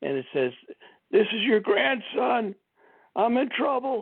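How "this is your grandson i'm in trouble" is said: very high, gravelly put-on voice. Retelling a scam call from a supposed grandson, imitating a gravelly voice. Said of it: "there's a gravelly voice".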